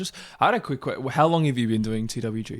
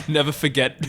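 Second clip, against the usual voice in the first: ordinary talk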